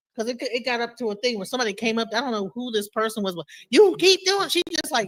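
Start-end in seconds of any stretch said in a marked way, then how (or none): 3.7-4.5 mock old-woman scolding holler, pitched up. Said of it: "yelled at me like she was my grandma".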